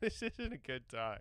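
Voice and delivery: soft, laughing while upset, like at bad news.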